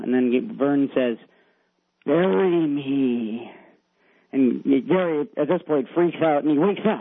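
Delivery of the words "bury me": put-on spooky ghost voice, scary. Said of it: "really scary voice".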